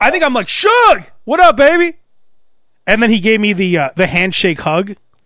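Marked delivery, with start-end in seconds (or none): 0.5-1.9 thrown, changed-up voice, very high and loud. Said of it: "You threw your voice like that".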